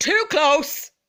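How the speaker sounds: very loud, high shout in biggest voice. Retelling telling off a man standing too close: retelling a loud shout. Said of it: "in the biggest, loudest voice".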